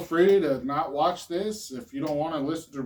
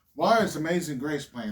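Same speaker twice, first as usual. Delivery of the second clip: normal talking voice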